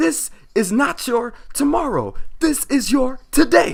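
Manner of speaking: very loud, very high, booming, pumped-up motivational hype. Showing how a gym spotter should talk, pumped-up motivational voice. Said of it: "you got to come in with the motivational voice".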